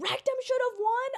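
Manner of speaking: mock, shrill, very high heckling yell. Imagining someone in a quiet award show: imitating someone yelling. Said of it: "someone yells".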